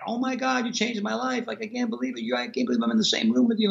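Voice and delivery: high, tearful, sobbing outpouring. Recalling a stranger at the pharmacy, the speaker imitates a girl sobbing. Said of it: "some girl is sobbing like".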